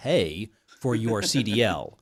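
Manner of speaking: skeptical, slow, ironic scare-quote delivery. Urging careful evaluation of companies, spoken in an air-quote voice. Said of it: "I'll do my air quote voice again".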